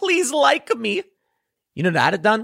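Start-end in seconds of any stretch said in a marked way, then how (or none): 0.0-1.0 pleading, begging tone, pitched very high. Acting out someone dropping to his knees to beg: imitating someone begging. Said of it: "he begs them".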